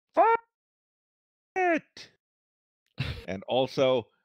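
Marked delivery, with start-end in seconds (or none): 0.2-2.1 very high, charging war cry shout. Voicing a character charging into an attack: shouting.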